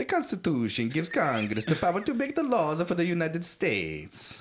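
put-on Italian accent. Reading a translated section of the constitution aloud, in an attempted italian accent. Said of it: "I'm trying to do an Italian".

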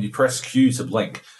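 ordinary talk, nothing marked

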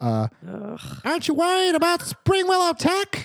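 very small voice. Retelling how someone at the back asks a question; very small voice. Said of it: "ask in a very small voice".

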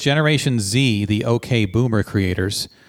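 normal talking voice

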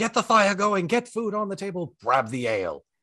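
yelling, pitched high. Narrating a role-play scene, voicing a man who runs off yelling orders. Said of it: "just starts yelling".

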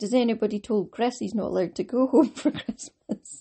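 talking through laughter. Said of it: "I'm laughing".

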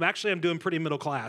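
ordinary talk, nothing marked

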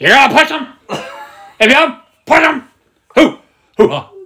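high-pitched shout at full volume. Suggesting the other speaker do the whole Al Pacino thing: Al Pacino voice. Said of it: "do the whole Al Pacino thing".

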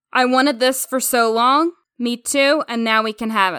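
ordinary talk

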